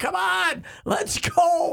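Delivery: very high, drawn-out screaming. Retelling how someone courtside reacted to a long review: imitating someone screaming. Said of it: "he's just screaming at him".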